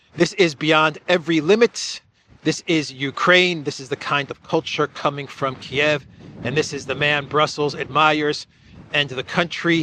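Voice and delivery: ordinary talk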